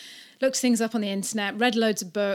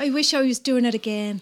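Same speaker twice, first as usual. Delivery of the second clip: put-on Irish accent; 4 dB louder than usual. Asked for an Irish accent, repeating what she said, in an Irish accent. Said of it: "Better than mine".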